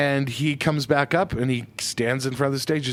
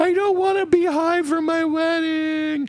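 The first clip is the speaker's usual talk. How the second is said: very high, weepy, drawn-out sobbing voice. Retelling what a bride said when she started crying: imitating someone crying. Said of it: "And she starts crying, like".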